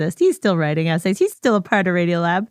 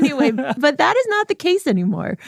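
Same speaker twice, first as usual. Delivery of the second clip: said through a laugh, pitched up; 10 semitones higher than usual. After joking about their own old self-promotion, the speaker moves on, laughing.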